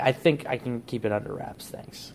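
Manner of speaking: ordinary talk, nothing marked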